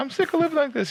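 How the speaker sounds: very high-pitched shouting. Retelling how Tammy yells at Jack: imitating Tammy yelling. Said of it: "every time Tammy starts yelling at him".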